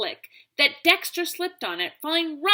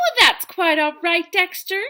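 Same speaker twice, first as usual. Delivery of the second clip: falsely cheerful, put-on bright voice; 3 semitones higher than usual. Narrator reading a teacher's reply to her new student, in a fake cheerful voice. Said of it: "she said in a fake cheerful voice".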